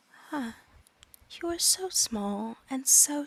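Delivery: slow talking-hand voice, every word drawn out. Voicing the hand as it answers the players: voice of Zion.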